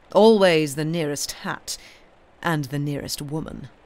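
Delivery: ordinary delivery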